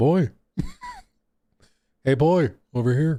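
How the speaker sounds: fumbling, sing-song delivery with swooping pitch. Trying to voice Kratos as Moist Critical would: bad Moist Critical voice. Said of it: "I can't do a good Moist Critical voice".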